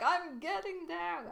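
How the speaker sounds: very high, shrill, all-caps yelling. Retelling an all-caps chat reply to another speaker: imitating own yelled reply. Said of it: "so it's like, I'm yelling it".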